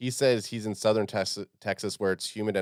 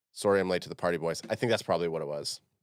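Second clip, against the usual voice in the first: plain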